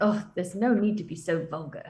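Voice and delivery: quiet, low mumble under the breath. Reacting in character to servants belching loudly: mumbled under the breath. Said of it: "mumble under my breath".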